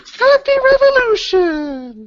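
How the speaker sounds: very high, tiny little toy voice. Describing an arcane toy that speaks when used, in a tiny little voice. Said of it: "And a little voice goes".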